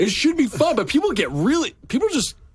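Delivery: shouting. Answering another speaker about whether philosophy is fun: yelling. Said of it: "I'm yelling right now".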